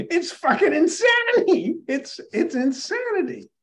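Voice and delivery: very high, shrill, drawn-out scream. Ranting about originalist thinking in the Supreme Court: screaming. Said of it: "hearing [name] screaming".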